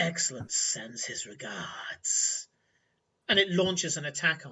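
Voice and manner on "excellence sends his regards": low, slow, throaty, guttural creature voice. Narrating a fight, the speaker voices a creature addressing the player in a guttural voice. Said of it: "in a guttural voice and then a sneering laugh".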